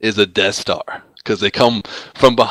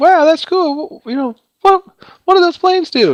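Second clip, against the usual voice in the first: very high, put-on girly voice; 4 dB louder than usual. Retelling how Laura reacted to the YouTube uploads, imitating Laura in a girl voice. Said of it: "that's like my girl impersonation".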